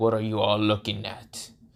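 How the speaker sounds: stoic, unbothered, flat, deep, quiet voice. A narrator voices Bartos as everyone glares at him: deeper voice. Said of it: "Into a deeper voice".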